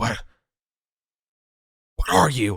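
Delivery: put-on high, loud, frightened, startled old man voice. Narrating a scene, voicing an old man searching for rings; terrified old man.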